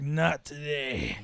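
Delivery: woozy, low, slow badass hero growl. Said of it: "Kevin Costner's all woozy and badass".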